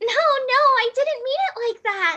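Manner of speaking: put-on very high, light, flustered anime-girl voice. Performing a character's line reacting to Kirito, very light character voice. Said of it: "it's just very light".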